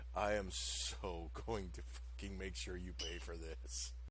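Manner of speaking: through gritted teeth. Voicing a character who threatens a player: through gritted teeth. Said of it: "he grits his teeth".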